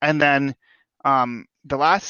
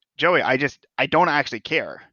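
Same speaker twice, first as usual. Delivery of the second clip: ordinary talk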